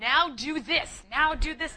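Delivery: loud, mean barking voice. Retelling Kevin ordering arm exercises in the bedroom, imitating Kevin as drill sergeant. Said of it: "he was like a mean drill sergeant".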